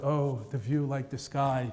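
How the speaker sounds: mock mumbling under breath. Describing a movie, the speaker acts out a man's line: imitating him muttering. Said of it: "And he mutters".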